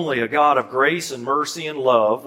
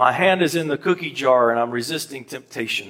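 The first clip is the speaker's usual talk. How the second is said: plain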